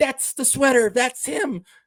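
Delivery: tiny, high, snippy voice, almost yelling. Retelling a woman pointing out a man to others: imitating her little high voice. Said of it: "in this little fucking high cunty voice".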